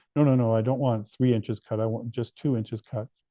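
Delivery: ordinary delivery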